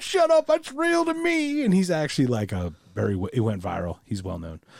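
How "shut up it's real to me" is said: very high, slow, tearful blubbering. Retelling a viral video of a guy crying about wrestling: imitating a man crying. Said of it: "And he starts crying".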